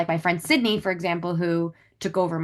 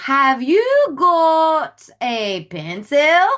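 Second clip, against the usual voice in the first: put-on very slow, high, drawn-out little-kid British accent; 9 semitones higher, 7 dB louder than usual. Retelling what the little kids say to her, in a little kid's British accent. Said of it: "they have these little British accents".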